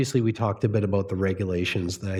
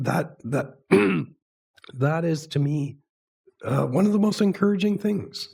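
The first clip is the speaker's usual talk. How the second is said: hoarse, tearful-sounding, choked-up voice, halting and breaking; 6 semitones higher than usual. Speaker losing their voice while talking about advocacy work, sounding choked up. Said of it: "I really sound like I'm crying here".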